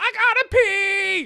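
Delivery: put-on very loud, very high kid shriek, "pee" stretched. Retelling a kid in the car needing to pee: imitating a child screaming. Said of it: "just screams it".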